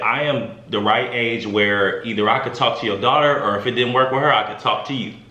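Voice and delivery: plain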